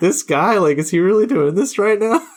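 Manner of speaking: high, incredulous disbelief.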